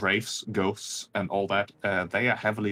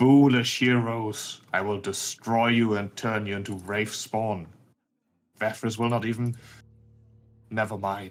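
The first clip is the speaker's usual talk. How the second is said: eerie, otherworldly, haunting spectral wraith voice; 2 semitones higher, 4 dB louder than usual. Narrator voices a wraith struck by a hero's sword, in a haunting wraith voice. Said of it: "in its haunting voice in common".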